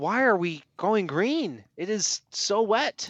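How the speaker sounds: play-acted very slow, high, drawn-out, incredulous scream. Retelling watching onboard cameras of a wet track: retelling a scream. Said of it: "I'm just screaming, like".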